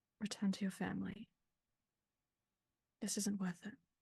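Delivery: murmured, barely voiced, hushed whisper under the breath. Playing a character comforting someone, hands on shoulders: quiet whisper under breath. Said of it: "very quietly beneath her breath whispers".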